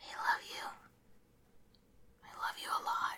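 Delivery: faint, very quiet, breathy, barely voiced whisper. Telling the person they admire that they love them, whispering. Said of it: "I don't know why I'm whispering".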